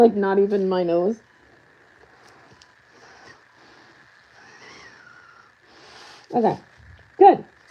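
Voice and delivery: muffled voice, as if through a respirator mask. Talking after putting on a respirator for epoxy work: muffled by a respirator. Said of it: "I'm about to sound a little bit like Darth Va-".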